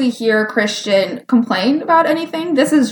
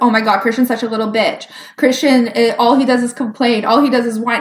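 ordinary delivery

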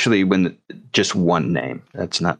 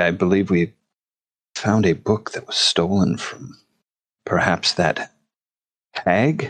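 lowered, hushed voice. A player's character checks that no one is within earshot, then speaks in a lowered, hushed voice. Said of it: "I kind of lower my voice".

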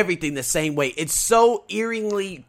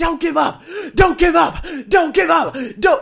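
acted, very high, repeated screaming; 12 semitones higher, 3 dB louder than usual. Speaker retells pushing on while people ran around: reenacting screaming at oneself. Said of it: "I'm literally screaming at myself".

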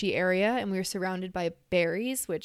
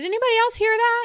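very loud shouted call, pitched way up high; 8 dB louder than usual. Retelling waking in a tent after a noise: imitating own past yell. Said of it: "I yelled out".

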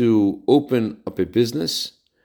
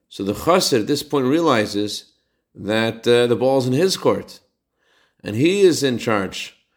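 ordinary delivery

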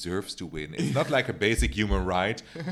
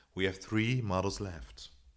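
mock TV show voiceover voice; 8 dB quieter than usual. Starting off the episode like the show's fake voiceover: Tyra voiceover impression. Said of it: "I'm going to do a Tyra".

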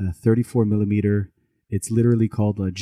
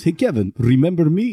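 exaggerated Russian accent; 8 semitones higher, 3 dB louder than usual. Retelling how a man from up the street greeted him, in a russian accent. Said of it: "And all I say in Russian accent".

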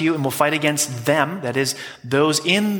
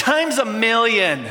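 raised, pitched-up voice; 7 semitones higher than usual. Retelling his wife's answer after he said ouch, in a raised voice. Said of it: "with a raised voice".

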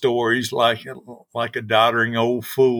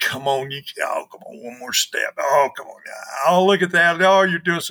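play-acted, high, pleading, begging, coaxing voice; 6 semitones higher than usual. Retelling urging kids to climb poles: imitating begging and pleading. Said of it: "begging and pleading and".

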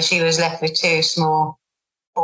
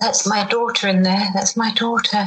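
put-on quiet mutter under breath, higher; 4 semitones higher than usual. Retelling what she muttered to herself in the kitchen: imitating someone muttering under breath. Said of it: "I could hear her muttering under her breath".

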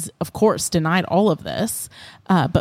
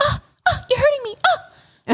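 cringe-inducing put-on voice, much higher. Retelling what Victoria said while pushing to get in, imitating Victoria's cringey voice. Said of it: "in this voice that makes you want like cringe".

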